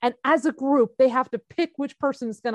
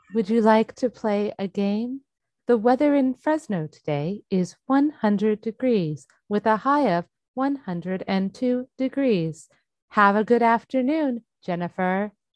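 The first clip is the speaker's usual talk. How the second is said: slightly eerie put-on voice; 2 semitones lower than usual. Co-host doing a lightly eerie voice on request. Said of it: "You seriously do that too well".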